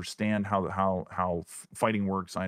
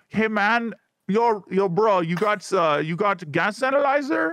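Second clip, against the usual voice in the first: put-on foreign man accent, higher and louder; 13 semitones higher, 8 dB louder than usual. Showing how to talk to other players over voip: put-on foreign guy voice. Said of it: "the probably foreign guy".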